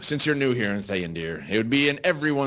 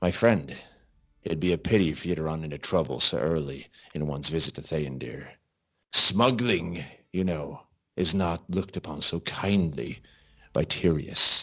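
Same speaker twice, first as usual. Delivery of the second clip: hushed whisper, much lower pitch; 7 semitones lower than usual. Narrating a game, a character pulls Niv aside and speaks into Niv's ear, whispering. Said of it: "he kind of whispers into your ear".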